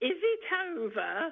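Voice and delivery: put-on very odd northern English accent, high pitch. Recalling coming round from anaesthetic, the speaker imitates their own strange northern english accent. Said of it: "In this very strange northern accent".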